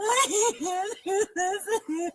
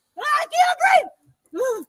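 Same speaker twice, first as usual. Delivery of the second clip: put-on, high, hard, raised yell; 7 semitones higher than usual. Acting out someone pleading with the cops, retelling a yell. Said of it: "You're yelling".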